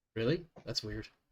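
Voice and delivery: sarcastic jab full of snark. Answering a player who says they aren't telling anybody what to do: snarky. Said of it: "I am full of snark today".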